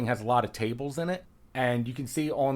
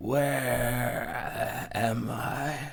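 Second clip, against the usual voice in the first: drowsy, groggy, just-woken voice. A character sways and opens his eyes in a role-play scene, groggy, just waking. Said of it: "he groggily opens his eyes and goes".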